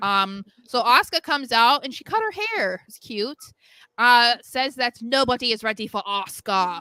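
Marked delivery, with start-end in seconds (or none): 4.4-6.8 put-on British accent. Recapping what Asuka says on the show: Wade Barrett British accent. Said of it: "why did I say it like Wade Barrett again?".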